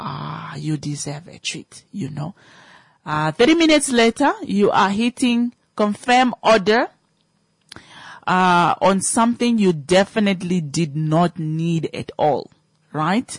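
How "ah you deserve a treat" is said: tempting, hushed whisper. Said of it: "a little voice ... that is going to whisper to you".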